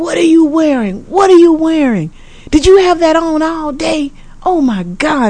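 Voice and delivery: high-volume, high-pitched mock scream.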